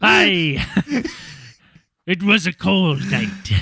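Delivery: put-on pirate voice. Telling a story start in the pirate voice: pirate from Family Guy voice. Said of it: "the pirate from Family Guy".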